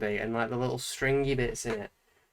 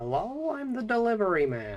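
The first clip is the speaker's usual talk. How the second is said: terrible high voice swooping all over; 9 semitones higher than usual. Doing an impression while drawing a character: Nostalgia Critic impression. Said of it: "my nostalgia Craig impression".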